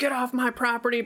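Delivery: mock high-pitched screaming, angry tone. Retelling a scene where a lady comes out of a house and starts screaming: retelling a lady's scream. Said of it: "starts screaming".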